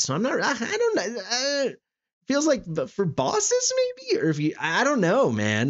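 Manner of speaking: voice breaking. Someone reading through a game skill, unsure what it's good for; voice cracking. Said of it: "My voice is cracking".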